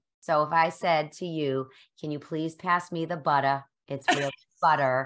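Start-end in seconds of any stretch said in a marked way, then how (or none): 2.0-5.1 heavy, full-on Boston accent, fast. Put on the spot to show her native Boston accent, strong Boston accent. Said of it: "Just give us the Boston accent".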